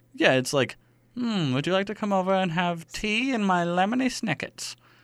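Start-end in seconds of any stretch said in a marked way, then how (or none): 1.2-4.8 put-on old woman voice, higher. Improvising a skit about tea and cookies: old woman impression. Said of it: "my old woman impression".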